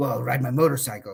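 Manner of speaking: acted gruff heroic voice. Retelling a sketch where Professor X fires Wolverine: imitating Wolverine. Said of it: "He's like".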